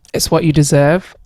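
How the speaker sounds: ordinary delivery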